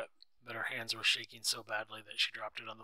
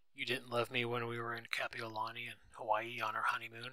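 plain

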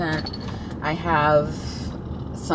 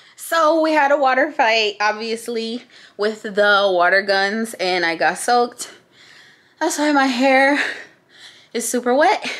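out of breath, puffing, high and loud; 5 semitones higher, 6 dB louder than usual. Just after a water fight, telling listeners about it, out of breath. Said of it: "I'm kind of out of breath".

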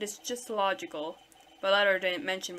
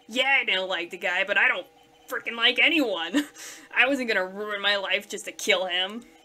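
louder, aggressive, combative and defensive; 6 dB louder than usual. Arguing among suspects after a death, one pushes back, aggressive and defensive.

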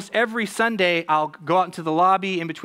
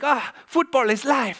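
bursting with joy, super excited, pitched-up cheer; 7 semitones higher than usual. Describing a Ted Lasso character meeting the coach: excited Danny Rojas impression. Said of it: "That's my best impression".

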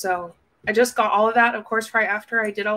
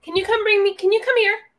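very high, shrill calling-out yell; 11 semitones higher than usual. Calling out to someone nearby while talking to the audience, yelling. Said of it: "Sorry, am I yelling?".

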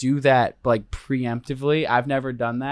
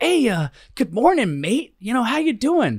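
very high, chipper voice; 10 semitones higher than usual. Retelling how a Special Forces guy came up beside the speaker on the trail, imitating a chipper greeting. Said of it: "instead he's like all chipper".

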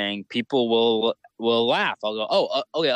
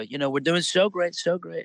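pitched-up, musing voice that peters off; 6 semitones higher than usual. Showing the nuances of a politician's voice: Trump impression, soft voice. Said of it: "nuances in his voice".

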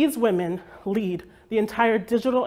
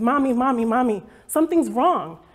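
play-acted scared, tearful little girl's crying voice; 3 semitones higher, 4 dB louder than usual. Retelling how a daughter woke her up: imitating a scared crying child. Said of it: "wakes me up really scared, and she's crying".

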